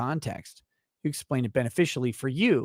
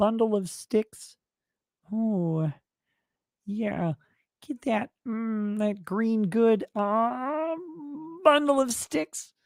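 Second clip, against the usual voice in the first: sultry frog voice, pitched up; 8 semitones higher than usual. Answering a request to say a phrase multiple times, in a sexy Kermit voice. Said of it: "in your sexiest Kermit voice".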